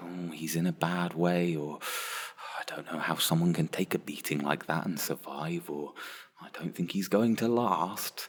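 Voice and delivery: hushed, nervous and scared. Beside a badly injured rebel lying in the snow, hushed and quiet. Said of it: "we're hushed, we're a little bit quiet".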